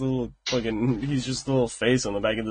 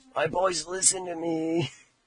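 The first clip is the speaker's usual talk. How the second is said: imitated raspy throaty voice, quieter; 5 semitones higher, 3 dB quieter than usual. Echoing the other speaker's plea back at him, mimicking a raspy throaty voice. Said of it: "Sounds like throat cancer".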